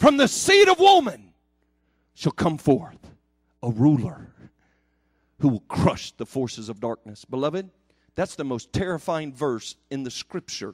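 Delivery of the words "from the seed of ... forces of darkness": booming, thunderous voice with wide swooping pitch swings. Quoting a Bible verse aloud, booming voice of God. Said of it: "thunderous voice".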